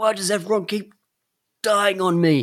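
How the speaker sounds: loud, shrill, very high screaming wail. Mocking a game's script, acting out a character's screamed line: retelling a scream. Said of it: "He screams".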